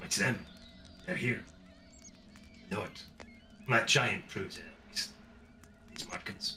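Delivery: hushed conspiratorial voice. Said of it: "conspiratorially and with voices hushed".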